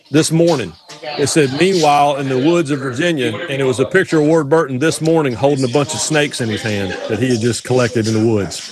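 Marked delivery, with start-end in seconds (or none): none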